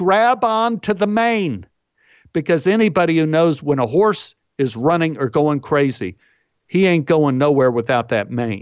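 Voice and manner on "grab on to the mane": mock yelling, high, drawn-out screaming. Retelling a horse ride where his wife called out, imitating someone yelling. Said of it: "screams and yells out".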